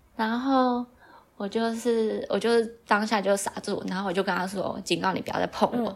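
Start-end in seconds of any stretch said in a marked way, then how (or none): none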